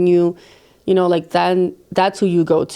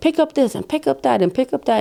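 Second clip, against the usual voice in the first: mock high, frantic screaming; 7 semitones higher than usual. A parent retells getting home and ordering everyone to pick up, screaming around the house. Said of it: "I'm like screaming around the house".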